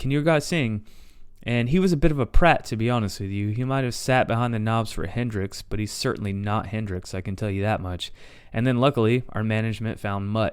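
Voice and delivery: ordinary talk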